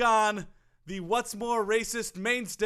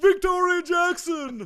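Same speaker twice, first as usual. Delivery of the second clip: loud, high-pitched announcer call-out, big delivery; 8 semitones higher, 6 dB louder than usual. Calling out a name the way Don Pardo would: Don Pardo announcer voice. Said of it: "names that sound good in the Don Pardo voice".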